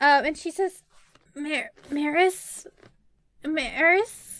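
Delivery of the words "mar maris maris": small, quiet, faint voice from far off. Voicing a character calling a name: small faint faraway voice. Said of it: "You hear a small, faint, quiet, faraway voice".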